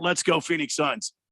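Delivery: ordinary talk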